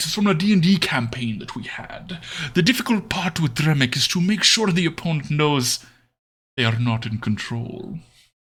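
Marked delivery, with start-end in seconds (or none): 2.5-8.0 demon character accent. Showing a demon broker character from a D&D campaign: demon broker Dremic accent. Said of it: "my demon broker accent".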